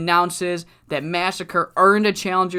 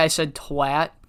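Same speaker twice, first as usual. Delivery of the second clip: ordinary delivery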